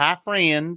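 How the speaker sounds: put-on lady's voice with a Southern US accent.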